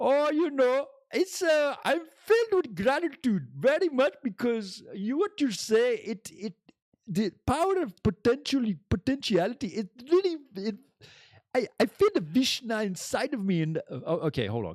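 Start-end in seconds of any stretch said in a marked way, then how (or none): 0.0-13.6 very high, stumbling, rambling put-on voice. Voicing a friend Apu answering how he is doing: Apu voice. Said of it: "calm down there, Apu".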